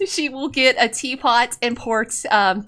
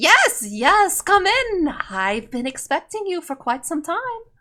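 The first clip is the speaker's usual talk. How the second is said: put-on high-pitched old woman character voice; 5 semitones higher than usual. Voicing Madame Eva greeting the players into her tent: Madame Eva voice. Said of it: "She says".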